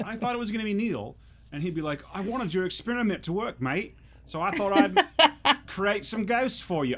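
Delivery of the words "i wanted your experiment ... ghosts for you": put-on Australian accent. Imagining what Neil would have said, imitating Neil's Australian accent. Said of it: "I can't do an Australian accent".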